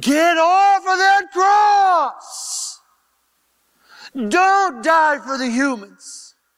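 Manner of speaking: high, slow demonic scream. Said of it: "the entire fallen creation screaming at you".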